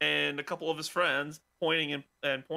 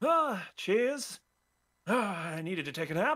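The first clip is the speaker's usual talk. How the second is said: put-on drunk voice, higher pitch; 4 semitones higher than usual. Voicing Cassius as a guard brings him to the cell: drunk Cassius voice. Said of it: "you see a drunk Cassius go".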